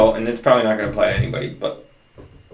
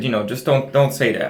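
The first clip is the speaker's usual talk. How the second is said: plain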